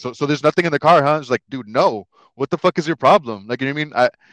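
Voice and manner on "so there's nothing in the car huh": usual speaking voice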